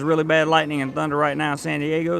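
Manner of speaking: normal talking voice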